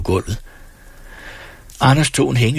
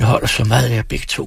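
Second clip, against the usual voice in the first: ordinary delivery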